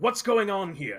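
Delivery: loud calling out. As the lizard folk king, addressing the group: calling out. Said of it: "he just kind of calls out".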